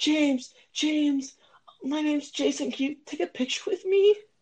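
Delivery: put-on very high, girlish, female-sounding voice. Playing the co-host in a made-up scene, imitating Jason in a female voice. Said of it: "why did I sound like a female".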